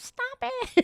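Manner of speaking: put-on high, loud old lady voice, pleading.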